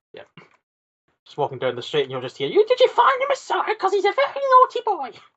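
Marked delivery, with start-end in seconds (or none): 2.4-5.0 very high, shrill, loud comic voice. Imagining game characters heard in the street: Monty Python voice. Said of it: "it's just basically gonna be Monty Python voices".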